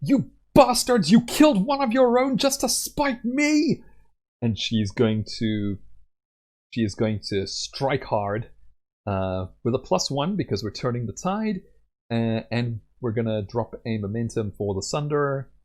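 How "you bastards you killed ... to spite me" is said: very high, enraged, furious battle cry. Voicing a character enraged by a companion's death: shouting in anger. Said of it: "and she will shout".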